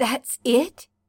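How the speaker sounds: hoarse, raspy, scraped-out rasping words. Weak in bed, you catch his wrist as he turns away, rasping. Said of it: "you rasp".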